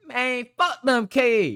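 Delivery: put-on country accent, very high pitched. Retelling what a man said about the news story, in a country accent. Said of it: "That's what he said in his country accent".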